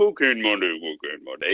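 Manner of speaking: low, goofy, funny put-on announcer voice. Retelling the sound engineer's joke: imitating a funny put-on voice. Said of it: "make his voice go".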